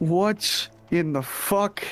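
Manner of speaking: very slow, long, drawn-out sighing delivery. Reacting in character as a broom is brought out: sighing while speaking. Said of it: "I'm just gonna sigh, be like".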